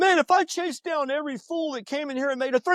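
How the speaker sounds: high-pitched, defensive shouting. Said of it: "Hosty gets defensive".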